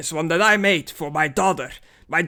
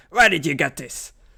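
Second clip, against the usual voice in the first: put-on dwarf character voice, mock furious. Retelling a scene where a dwarf grabs a vendor over a bracelet, angry dwarf voice. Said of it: "a dwarf getting angry".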